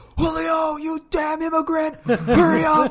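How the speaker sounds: shrill, very loud, very high scream at top of lungs. Retelling how a teacher screamed outside at a student: retelling a scream. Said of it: "he just screams at the top of his lungs".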